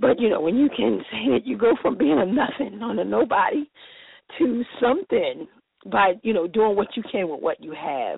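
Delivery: speaking while holding tears just in check. Telling someone about showing their children what they got printed, holding back tears. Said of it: "I'm trying not to cry".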